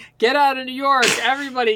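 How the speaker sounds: mock high-pitched yelling. Recounting a scene where people run around: retelling a yell. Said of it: "start just yelling".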